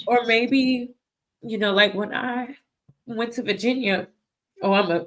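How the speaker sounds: crying voice, speaking while crying. Recording a video, recalling a trip to Virginia: crying voice. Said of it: "from this crying voice".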